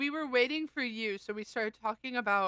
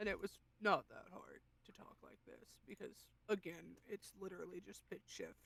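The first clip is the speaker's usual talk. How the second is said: very quiet, breathy, very hushed, deep pitched-down voice; 3 semitones lower, 15 dB quieter than usual. Demonstrating how a character sounded, in a pitched-down voice. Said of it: "So he sounded like this".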